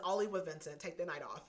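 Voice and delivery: ordinary talk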